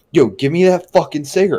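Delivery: put-on irritable, rude, testy, aggressive tone. Retelling how Hunter demanded a cigarette: imitating Hunter being testy. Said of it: "he'd get a little testy".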